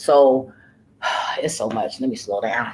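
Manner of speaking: holding back tears, fighting not to cry, pushing on. Retelling a stressful story, holding back tears. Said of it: "'cause I don't wanna cry".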